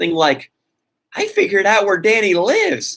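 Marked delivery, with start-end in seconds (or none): 1.2-3.0 snide, sneering, pitched-up little jab. Retelling a stranger's online threat, imitating a snide tone. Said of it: "he had this snide tone".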